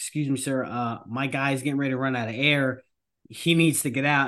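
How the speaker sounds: ordinary delivery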